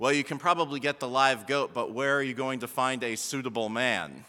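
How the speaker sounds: mock very low, bone-dry, flat deadpan delivery. Speaker quotes their wife's reply, retelling a deadpan reply. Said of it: "totally deadpanned to me".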